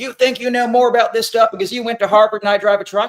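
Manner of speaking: heated argumentative yell. Retelling what a man who'd had a few drinks yelled in an argument, retelling a shout. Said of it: "finally started shouting".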